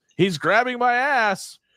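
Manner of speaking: very high, slow, drawn-out holler. Retelling a photo with a wrestler who yells: imitating Jake Roberts yelling. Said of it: "and he yells".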